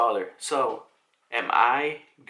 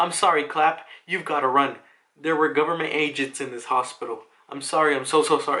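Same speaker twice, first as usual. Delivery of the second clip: put-on blubbering, sobbing, bawling through tears; 2 semitones higher than usual. Retelling a comic scene where a doctor apologizes: imitating someone bawling. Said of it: "bawling his eyes out".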